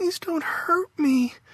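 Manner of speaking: put-on very high, whining little-girl voice. Faith, lying limp in a nightmare, speaks, whining in a little-girl voice. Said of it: "In a little girl voice, she whined".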